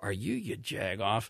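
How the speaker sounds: talking out of mouth's side. Speaker retelling what a man said to him at a funeral, out of the side of mouth. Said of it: "with the side of his mouth".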